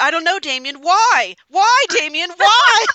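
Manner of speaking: high, loud, fed-up shouting in full meltdown. Retelling your answer to him fussing at you: reenacting a meltdown yell. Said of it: "I had my meltdown".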